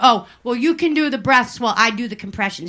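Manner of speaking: ordinary talk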